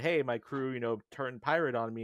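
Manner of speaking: ordinary delivery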